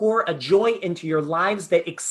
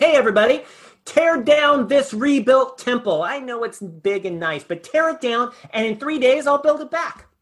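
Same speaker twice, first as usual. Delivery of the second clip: put-on, loud, high, raised proclaiming voice; 6 semitones higher, 5 dB louder than usual. Retelling a Gospel scene, calling out to everybody at the temple, loud voice. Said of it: "in a loud voice he says".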